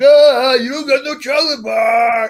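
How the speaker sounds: very loud, high, drawn-out mocking jeer. Retelling teasing another kid as a child, imitating a mocking taunt. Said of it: "I'm mocking that you don't have".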